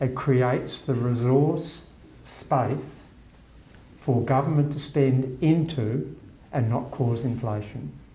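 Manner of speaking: very slow, deliberate, each word weighed. Explaining a point, after promising to say it very slowly. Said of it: "I'll say this very slowly".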